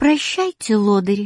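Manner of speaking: affectionate, tender, fond tone. Saying goodbye to those about to leave, affectionately. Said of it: "ласково сказала Катя".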